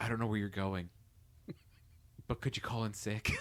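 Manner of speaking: very quiet, hushed, barely voiced words. Retelling a character's line said while hugging someone: imitating speaking very softly. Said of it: "he says this very softly".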